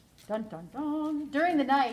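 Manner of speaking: plain reading voice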